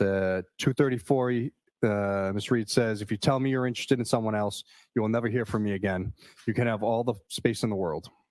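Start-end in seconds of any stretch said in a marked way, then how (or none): none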